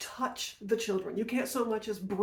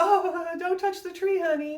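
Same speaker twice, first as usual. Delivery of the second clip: put-on mild, half-hearted grandma voice, high and raised; 9 semitones higher, 6 dB louder than usual. Retelling a scene, the speaker quotes grandma's reply to the boy: imitating grandma. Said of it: "grandma went".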